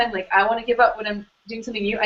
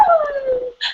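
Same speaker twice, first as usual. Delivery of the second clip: very high-pitched, puppy-like whimpering. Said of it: "really vocal".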